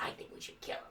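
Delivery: hoarse, raspy, whispered goblin voice. Telling a story to a listener, speaker voices the goblin: raspy goblin voice. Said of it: "you know the goblin is the raspy voice".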